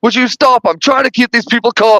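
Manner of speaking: acted-out, high-pitched, rebuking tone. Retelling a movie scene where the warden yells at Ripley: imitating a yelling warden. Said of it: "he's yelling at her that".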